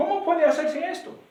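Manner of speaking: high-pitched, puzzled voice.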